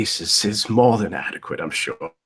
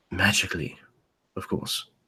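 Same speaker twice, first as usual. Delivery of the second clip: lowered, hushed voice; 2 semitones lower, 9 dB quieter than usual. A game master narrating a character explaining a mortar and pestle, lowered voice. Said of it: "He kind of lowers his voice".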